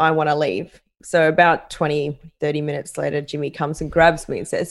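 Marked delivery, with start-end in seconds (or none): none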